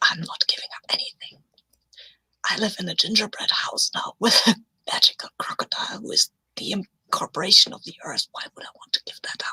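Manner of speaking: voiced stage-whisper aside. In a role-play, the speaker whispers to Dundee: whispering. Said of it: "I'm whispering to Dundee".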